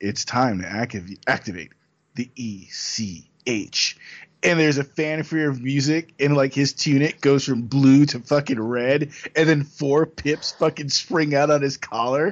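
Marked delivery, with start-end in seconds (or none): 0.0-4.0 put-on grand, slow, dramatic anime-style delivery. Retelling how a character announces an emergency to the camera: imitating a dramatic declaration. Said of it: "look at the fucking camera all dramatically and be like".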